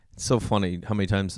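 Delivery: normal talking voice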